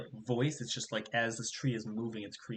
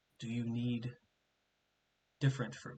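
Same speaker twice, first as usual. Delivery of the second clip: soft, creaking, rustling tree voice; 5 dB quieter than usual. Voicing a fruit tree that asks a player a question, in a creaking, rustling tree voice. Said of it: "it says it's a fruit tree. / Not dangerous. Just want to provide. / in these sounds of the branches moving, you hear a hello, but it's more of like the sound of the branches moving. / Through these cr".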